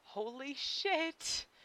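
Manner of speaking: faint, hushed, barely there exclamation. A young man repeats his exclamation for good measure: said faintly. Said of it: "he says again, faintly".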